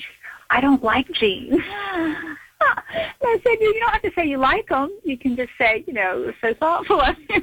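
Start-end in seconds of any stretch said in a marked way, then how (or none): 0.0-1.5 whispered. Retelling how her daughter whispered a reply to her. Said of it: "and she kind of whispered".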